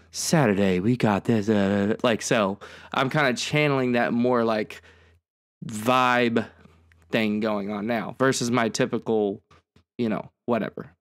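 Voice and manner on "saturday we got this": really smooth, easy, vibey radio-style delivery. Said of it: "I'd do my best, like, [name] impersonation".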